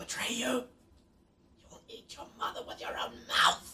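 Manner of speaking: whispering. Game master voices whispers the players hear passing the phylactery; whispering voices. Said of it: "you start to hear like whispers".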